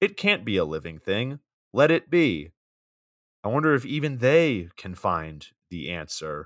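stiff, lifeless, slow, drawn-out wooden line reading. Reading a movie character's lines aloud to mock the acting: imitating Henry's bad acting. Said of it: "What I just did was probably".

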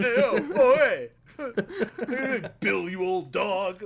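sing-song, very drawn-out, stretched way out. Imitating how Tony Danza would play the role: sing-song Tony Danza impression. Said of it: "almost like a sing-song delivery".

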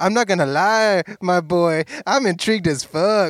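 put-on Mexican accent. Retelling a line from the scene in a fake Mexican accent: imitating Shia LaBeouf's fake Mexican accent. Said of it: "that fake Mexican accent".

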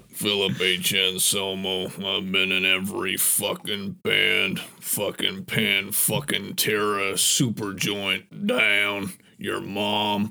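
low, deep, dropped-down put-on voice. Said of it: "You do a good [name]".

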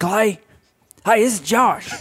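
very high-pitched voice. Retelling a phone call, doing a Josh impression. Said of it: "I did a Josh impression that was uncanny".

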